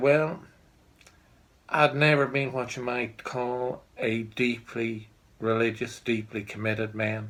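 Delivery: put-on American farmer accent, done badly. Quoting a farmer in his sixties telling his story: bad American accent. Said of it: "I don't do an American accent very well".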